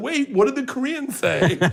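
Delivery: high, crying with laughter, laughing through tears. Retelling a story about a wife crying with laughter: imitating Leanne crying with laughter. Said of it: "she was crying, laughing, going".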